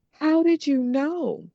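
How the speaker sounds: play-acted tearful crying. Retelling what a crying woman said to her; imitating someone crying. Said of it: "looked up through her tears and said".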